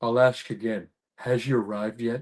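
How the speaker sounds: low, deep voice, dropped right down. Retelling a story from a film set, imitating Dolph Lundgren. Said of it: "you sound just like him".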